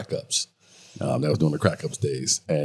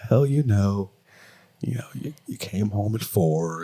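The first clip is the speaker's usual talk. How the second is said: teasing, taunting put-on voice; 4 semitones higher than usual. Speaker retells an argument, quoting her in a mocking imitation of her voice. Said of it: "Why you why you making fun of me".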